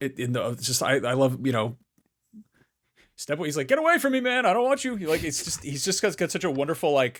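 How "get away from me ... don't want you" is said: very high-pitched, scared-sounding tough-guy voice. Quoting a line from a movie fight scene: imitating Keith David. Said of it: "his delivery".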